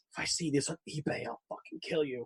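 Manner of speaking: very quiet, hushed, menacing whisper. Retelling how someone gave away an action figure: imitating a very quiet threat. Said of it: "very quietly goes".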